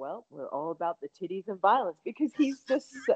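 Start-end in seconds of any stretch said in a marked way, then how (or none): 0.0-2.0 polished, clean, well-spoken, educated lecturer voice. Imitating a professor's well-educated sounding voice saying a crude slogan. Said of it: "I love that my professor is like".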